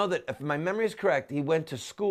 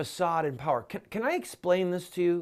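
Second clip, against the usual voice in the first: plain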